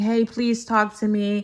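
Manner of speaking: ordinary delivery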